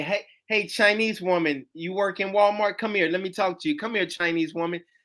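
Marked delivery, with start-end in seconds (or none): none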